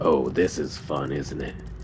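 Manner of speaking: low, soft, chuckling voice.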